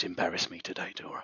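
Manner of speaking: low, hushed, close half-whisper. A character leans in to another and speaks into his ear, half-whispering in someone's ear. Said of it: "he whispers in your ear".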